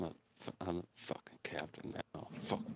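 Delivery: mumbling under breath. Speaker acts out what he says to himself, mumbling under his breath. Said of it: "you hear him mumbling underneath his breath".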